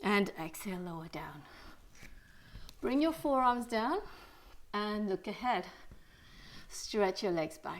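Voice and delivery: soft, out-of-breath voice. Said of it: "Sorry if I sound really out of breath".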